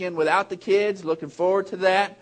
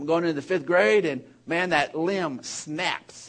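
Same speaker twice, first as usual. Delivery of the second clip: usual speaking voice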